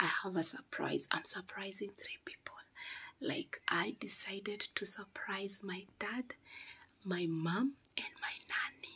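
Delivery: hushed, whispered delivery. A youtuber plans a surprise and doesn't want anyone to hear: whispering. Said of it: "I'm whispering because I don't want anyone to hear me".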